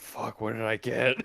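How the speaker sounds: muttered to oneself under the breath. A player voices his character's reaction, muttered under his breath. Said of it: "under his breath".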